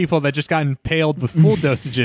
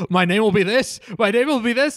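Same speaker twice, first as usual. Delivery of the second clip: mock fearful, frightened, high and rising; 7 semitones higher than usual. Retelling a movie scene where a character shakes: imitating someone shaking with fear. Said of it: "starts shaking, like, very quickly, like, out of fear".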